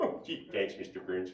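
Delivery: low, soft, dopey cartoon dad voice. Switching from one cartoon character to another mid-bit, the worker answers his boss: Homer Simpson voice. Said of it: "characters like Homer".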